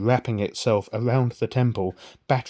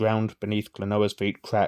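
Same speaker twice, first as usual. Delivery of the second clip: plain reading voice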